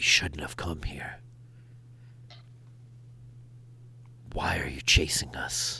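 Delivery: low, hushed murmured whisper. Speaking as Victor, narrowing his eyes at Escher and Nick, low voice. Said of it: "in a very kind of low voice".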